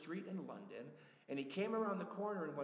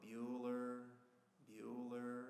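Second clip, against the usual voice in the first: very monotone, dead flat, bland reading; 5 semitones lower, 5 dB quieter than usual. Describing the teacher calling roll in Ferris Bueller's Day Off: very monotone. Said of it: "Very monotone".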